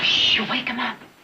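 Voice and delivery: hushed voice. Hushing another speaker beside a resting man: whispering. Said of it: "your whispering woke him up".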